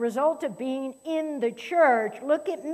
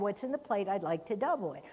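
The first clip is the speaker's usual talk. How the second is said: very quiet, hushed, low, quick, discreet delivery; 5 semitones lower, 9 dB quieter than usual. Speaker imagining what a woman could have said after the service, imitating a very quiet request. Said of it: "very quietly and said".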